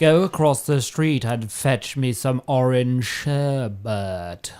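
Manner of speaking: slow voice, with sherbet drawn out. Answering a viewer's request to do an Austin Powers impression. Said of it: "asking for [name] to do an Austin Powers impression".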